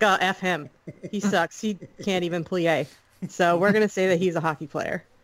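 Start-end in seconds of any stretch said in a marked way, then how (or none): none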